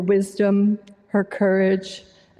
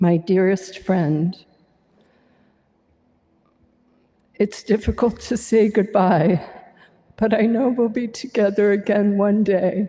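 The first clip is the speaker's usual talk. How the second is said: tearful voice, crying while speaking. Speaking at a celebration of a dearest friend's life, crying while speaking. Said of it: "I'm already crying".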